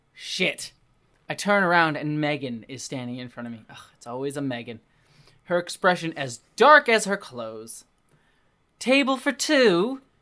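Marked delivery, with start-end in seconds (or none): 8.8-10.0 sickly sweet, saccharine tone, higher and louder. Reading a novel aloud, a character greets him at a table: saccharine tone. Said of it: "she says with a saccharine tone".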